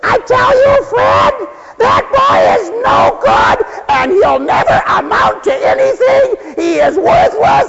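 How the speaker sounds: very high-pitched, raving, nagging rant. Acting out a mom heard through the door about her son, mock-raving. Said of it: "the mom raves on and on".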